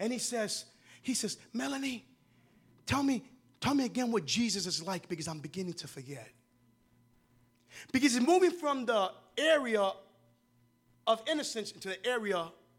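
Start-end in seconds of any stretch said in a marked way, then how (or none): 1.5-6.3 put-on child's whisper. Retelling a story of a child leaning into his sister's playpen: imitating a child whispering. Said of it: "he whispers to her".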